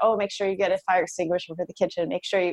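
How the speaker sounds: ordinary talk, nothing marked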